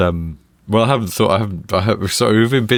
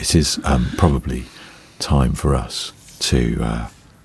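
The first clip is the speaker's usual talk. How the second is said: put-on hushed voice, lower pitch; 7 semitones lower than usual. Starting to wrap up the end of the show: put-on lowered voice. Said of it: "You're lowering your voice like the old grey whistle test".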